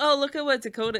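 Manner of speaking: put-on sarcastic delivery. Retelling how the other speaker showed off a child's artwork: imitating a sarcastic tone. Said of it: "you gave it to me sarcastically".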